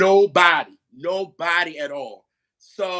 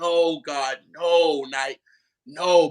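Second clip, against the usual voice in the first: reenacted crying, much slower; 3 semitones lower than usual. Describing playing an emotional album, retelling own crying. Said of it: "I just remember crying".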